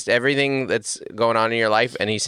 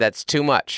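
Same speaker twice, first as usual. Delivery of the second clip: plain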